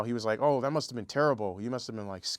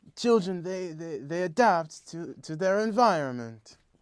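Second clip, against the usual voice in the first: slow, measured, deliberate, high-pitched, drawn-out speech; 7 semitones higher, 4 dB louder than usual. Showing the others an impression: Roman Polanski impression. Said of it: "my best, uh, Polanski impression".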